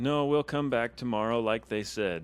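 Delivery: very loud, firm, severe, quick stern tone. Playing a character in a tabletop adventure, answering the other characters: stern voice. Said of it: "I say in in a stern voice".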